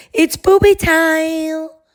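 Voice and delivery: tiny voice, very high, time stretched out. Retelling a voice calling from the hallway: imitating a little voice. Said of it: "a little voice come from the hallway".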